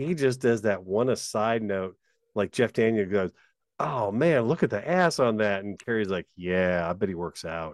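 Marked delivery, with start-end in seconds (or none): 6.4-7.7 put-on deadpan delivery, lower pitch. Retelling an actor's reply in a comedy scene, retelling a deadpan reply. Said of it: "It's deadpan and it works beautifully".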